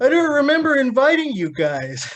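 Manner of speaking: lively, lilting, animated put-on voice, swooping. Recalling a night of drinking, the speaker quotes what was said, imitating Little Timmy. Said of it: "Did he say it in that voice?".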